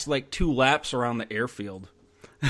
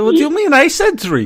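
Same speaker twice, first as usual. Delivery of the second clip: very high, very loud, fake German accent; 13 semitones higher, 12 dB louder than usual. Retelling what a guy in Delta said on a call for fire, imitating a German accent. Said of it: "with his German accent".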